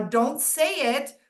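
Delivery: words stretched out slowly. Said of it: "Monica's warning".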